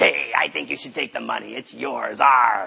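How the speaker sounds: raspy, low, rough pirate voice. Speaker voices the devil on a man's other shoulder, pirate voice. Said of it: "they always sounded like a pirate".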